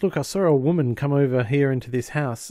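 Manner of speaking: ordinary talk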